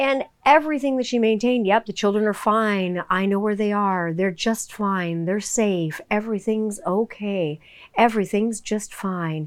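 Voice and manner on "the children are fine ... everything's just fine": mock flat, monotone voice. Retelling what a woman kept maintaining in court, in a monotone voice. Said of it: "monotone sort of voice".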